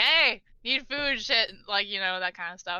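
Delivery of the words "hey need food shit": long, high-pitched yell. A woman turns away from the guests and shouts into the kitchen. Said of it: "literally shouts into the kitchen".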